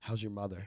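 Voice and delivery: put-on teary voice. Retelling a meeting at the unemployment office: imitating someone tearing up. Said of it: "starts tearing up".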